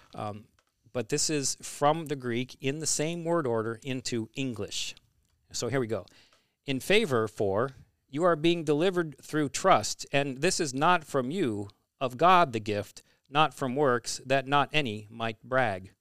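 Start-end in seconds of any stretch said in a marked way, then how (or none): 6.6-15.8 stilted, stiff, mechanical robotic delivery. Speaker reads a word-for-word Bible translation aloud, in a robot voice. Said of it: "You sound like a robot learning English".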